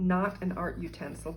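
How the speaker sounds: ordinary delivery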